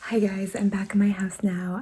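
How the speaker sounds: speaking in a whisper. Home at two a.m. with everyone asleep, greeting viewers: whispering. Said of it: "I'm kind of whispering because everybody else is sleeping".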